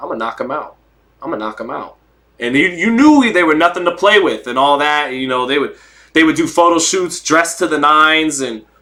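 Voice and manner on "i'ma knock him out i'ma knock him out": easy, relaxed, understated matter-of-fact tone, no bluster. Retelling a boxer's photo-op line: imitating Marvin Hagler saying it with a smile. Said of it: "look and smile and".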